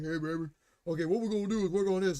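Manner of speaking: ordinary, casual dude talking voice. Imitating a mechanic talking through his wife's avatar: imitating a dude talking. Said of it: "talking with a dude like this".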